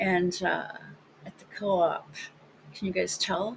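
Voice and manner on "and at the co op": mocking trendy style, soft, unsupported voice. Speaker demonstrates a speaking-style trend that drives them crazy: mocking the trendy speaking style. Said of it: "should I talk like this?".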